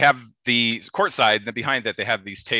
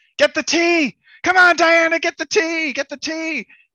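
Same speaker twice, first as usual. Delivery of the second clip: shrill, very high, drawn-out cheering shout; 6 dB louder than usual. Retelling yelling at a player arguing with the ref: retelling own yell. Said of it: "And I yelled".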